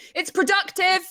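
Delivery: high mock insistence after a cough. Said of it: "coughing and then going".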